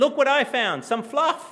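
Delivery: put-on delighted little child's voice. Retelling a small daughter bringing found fluff: imitating a child's great joy. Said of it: "with great joy that".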